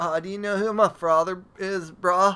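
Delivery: put-on surfer-bro voice. Joking with a friend about how they sound to others, surfer dude voice. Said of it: "I sound totally like".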